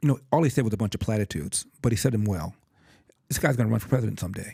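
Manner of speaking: ordinary delivery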